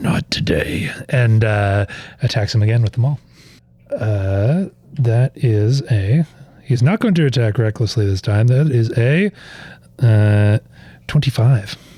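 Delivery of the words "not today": barely voiced, breathy whisper under the breath. Voicing a warrior rising to attack again: whispering under his breath. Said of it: "just whispers under his breath".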